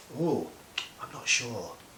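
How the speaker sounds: doubtful falling intonation on sure. Teaching intonation, voicing doubt with doubtful falling intonation. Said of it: "so doubt requires falling intonation".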